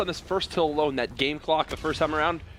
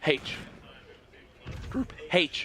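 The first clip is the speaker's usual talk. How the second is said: voice breaking, cracking on "H"; 5 dB quieter than usual. Speaker calling a score, saying it the way Benson would: Benson impression, voice cracking. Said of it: "Did my voice just crack?".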